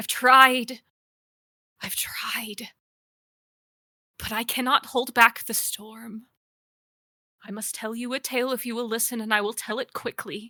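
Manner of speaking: voice breaking and cracked, yet holding firm. Voicing an old woman in a game, she speaks to the listeners, voice breaking. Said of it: "I'm too old to fix this myself, / [name] looks up and you can kind of see her face almost like she knew you would come. / I'm too old to fix this myself, / Her voice a little cracked but steady, / bit".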